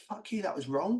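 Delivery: mock-angry outburst. Recounting an upsetting time, acting out own angry words. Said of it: "I was angry as well".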